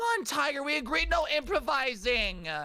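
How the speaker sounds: high, twinky voice. Reading the comic lines of Max the dog aloud: twink voice for Max. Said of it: "a twink voice for him".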